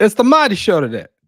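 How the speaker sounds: terrible put-on Brooklyn accent, loud and high. Opening the show, a host announces today's episode: terrible brooklyn accent. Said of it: "worst Bro- Brooklyn accent ever".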